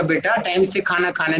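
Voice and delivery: normal talking voice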